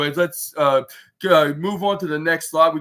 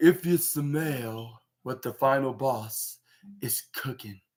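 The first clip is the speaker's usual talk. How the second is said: slow, deliberate word-by-word delivery, "smell" drawn out; 2 semitones lower, 8 dB quieter than usual. Retelling a wrestler's line to the crowd: slow The Rock voice. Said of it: "in the slow voice".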